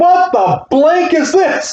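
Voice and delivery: very high, terrified, scared-stiff exclamation. Retelling how a woman reacted to a shaking bed: imitating someone terrified. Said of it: "She was so terrified".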